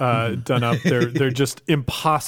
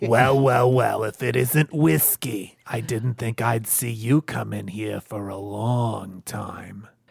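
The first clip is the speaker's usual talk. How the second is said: put-on voice of a smoking lady; 2 semitones lower than usual. Asked whether she's a smoker, trying out how she talks: put-on smoking-lady voice. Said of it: "Does she talk like this?".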